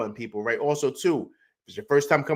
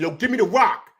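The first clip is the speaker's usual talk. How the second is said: insistent but contained scream; 6 semitones higher than usual. Retelling how he screams at a teammate on the bench: retelling a scream. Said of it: "And I'm screaming at".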